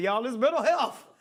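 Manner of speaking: loud, high-pitched mocking voice.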